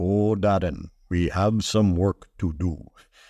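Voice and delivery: another man's voice, dropped low. At the end of your story, get the laugh by speaking to Darren, imitating another man's voice. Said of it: "I use his voice".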